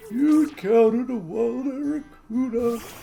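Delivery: put-on old person voice. Doing a line in an old person voice. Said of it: "I'm gonna do one with an old person voice".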